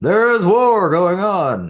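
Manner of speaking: very high, very loud, slow show-opening announcer voice. Imitating the narrator at the start of each episode: impression of the Clone Wars narrator. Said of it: "that was a great impression".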